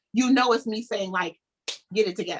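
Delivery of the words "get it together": imitated stern, scolding voice. Showing how a younger brother gets scolded: imitating own stern big sister mama voice. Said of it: "if you've ever had me talk to you in this voice".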